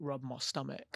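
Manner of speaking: goofy put-on South Australian accent. Imagining Elon Musk on Molly: goofy South Australian accent impression. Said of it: "his goofy ass South Australian accent".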